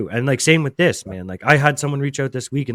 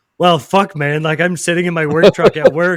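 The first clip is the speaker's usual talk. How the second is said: imitated crying, higher and louder; 5 semitones higher, 6 dB louder than usual. Retelling a phone call in a work truck: retelling own sobbing. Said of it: "sobbing in the work truck".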